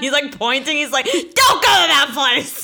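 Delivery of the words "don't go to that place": loud, high, drawn-out yelling. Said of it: "yelling at everyone".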